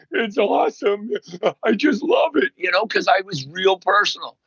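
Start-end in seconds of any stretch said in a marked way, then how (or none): 0.1-2.5 put-on tearful crying voice, higher. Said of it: "He's crying".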